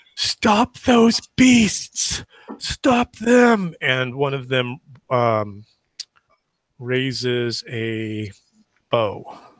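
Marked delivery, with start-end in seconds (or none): 0.2-3.7 screamed at a very high pitch. Voicing riders chasing the unicorns who yell at the party: screaming. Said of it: "And they're screaming".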